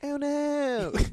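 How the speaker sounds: put-on Australian accent. Joking about a news story during the show, doing an australian impression. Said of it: "my Australian impression".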